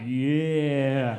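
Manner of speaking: drawn-out, utterly confident yeah. Retelling how an audience member answered: imitating a very confident yeah. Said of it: "the most confident way I've ever heard anyone say the word".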